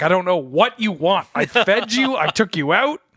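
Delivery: high, loud, fed-up voice.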